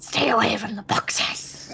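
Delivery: ominous, menacing whisper. Repeating a magically cast warning to leave the boxes: ominous whisper. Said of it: "you make this ominous whisper".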